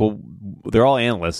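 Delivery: ordinary talk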